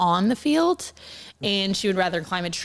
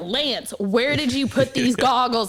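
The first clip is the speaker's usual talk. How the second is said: restrained, held-back calling out, like a scream; 3 semitones higher than usual. Retelling calling to a husband in public about goggles: retelling a scream. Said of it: "I'm screaming at my husband in public".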